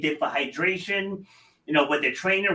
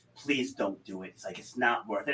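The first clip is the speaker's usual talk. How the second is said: mock teary pleading tone, much quieter; 8 semitones lower, 9 dB quieter than usual. Retelling his longtime doctor pleading with him, imitating doctor's teary plea. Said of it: "he even got teary-eyed".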